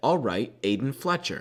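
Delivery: ordinary delivery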